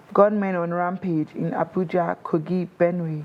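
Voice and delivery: ordinary talk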